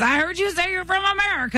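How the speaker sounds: loud put-on hollering. Retelling what a man said while walking over hot sand, retelling a shout. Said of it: "he's doing that thing where he's shouting".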